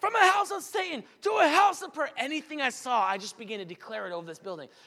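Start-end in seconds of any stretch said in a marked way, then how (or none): 0.0-2.1 very high, loud, proclaiming yell. Recounting a vision, repeating what they started yelling over the building: retelling a yell. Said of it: "I started yelling".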